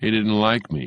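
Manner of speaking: bored, offhand, uninterested and listless. Reading a story, a character replies to another's question in a bored voice. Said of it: "Mallory said in a bored voice".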